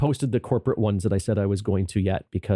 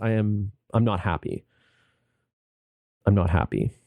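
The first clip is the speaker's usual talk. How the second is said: unhappy, down, sad voice. Admitting after a sobering couple of weeks: unhappy, down voice. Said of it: "you can hear it in my voice".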